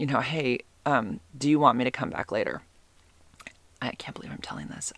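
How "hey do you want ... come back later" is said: put-on whisper. Retelling own past words during a kiss: imitating own past whisper. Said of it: "I think I kind of whispered".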